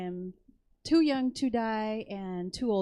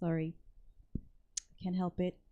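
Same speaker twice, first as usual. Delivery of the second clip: plain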